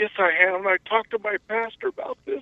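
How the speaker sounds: talking through tears, crying, voice pitched high. Answering the host's question about belonging to a congregation, crying. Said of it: "I'm sorry, I'm crying".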